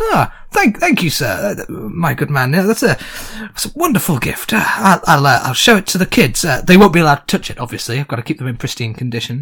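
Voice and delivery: smug, self-satisfied, pleased-with-himself tone. Voicing a guard who receives a gift: guard pleased with himself. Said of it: "pleased with himself, actually, and goes".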